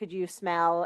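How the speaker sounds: plain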